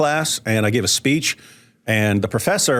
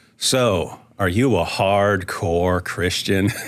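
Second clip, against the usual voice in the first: put-on odd weird tone, very slow and drawn-out; 3 semitones lower than usual. Retelling a friend's sudden question, imitating a friend's weird tone. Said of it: "Did he say it like that?".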